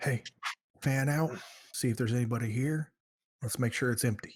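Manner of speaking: hushed, quiet half-whisper. A player's character gives orders to the group as they enter, half-whispering. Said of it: "I'm going to whisper to everyone".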